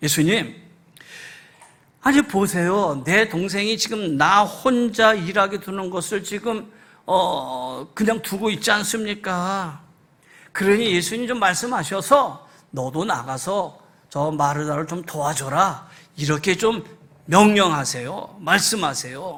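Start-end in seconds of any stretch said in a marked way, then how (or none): none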